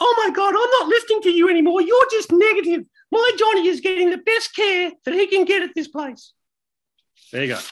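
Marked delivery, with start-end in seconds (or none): 0.0-6.3 very high, loud, silly little squeaky voice. Voicing someone defending a patient's care to prove a point, mocking idiotic little voice. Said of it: "that's my idiotic little voice".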